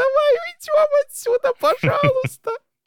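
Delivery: crying, begging plea in a very high tearful voice. Retelling watching a film full of jump scares, imitating her tearful plea to leave. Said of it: "у нее слезы градом льются".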